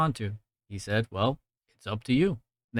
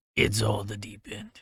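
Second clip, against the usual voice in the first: trying for a raspy, manly voice; 2 semitones lower, 4 dB quieter than usual. Retelling a movie scene, quoting the judge: Karl Urban voice as Judge Dredd. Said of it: "that raspy, manly Karl Urban voice".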